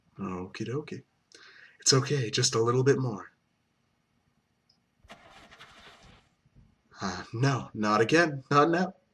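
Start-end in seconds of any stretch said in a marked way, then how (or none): 1.8-8.9 bad, unconvincing, pleading voice acting. Voicing a character who needs to calm down and drive: self-mocked bad voice acting. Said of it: "I'm really convincing with this voice acting".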